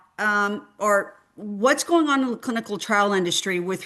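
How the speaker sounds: ordinary delivery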